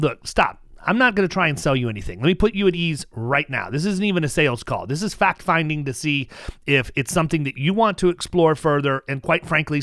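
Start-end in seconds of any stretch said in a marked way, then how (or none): none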